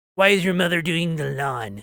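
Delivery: irate, angry, demanding tone. Retelling questions about a mother mowing the lawn: mimicking an angry person. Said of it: "I need the angry face for that".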